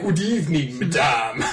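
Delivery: put-on classic vampire voice. Retelling how your brother mocked your email greeting, in a vampire voice. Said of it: "You sound like a vampire".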